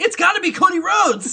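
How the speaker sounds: very high, very loud, belted-out call. Retelling what the announcer said when entrant thirteen came out: imitating Matt Striker's call. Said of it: "he goes".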